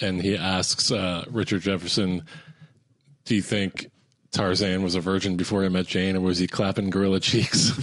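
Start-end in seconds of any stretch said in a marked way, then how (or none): none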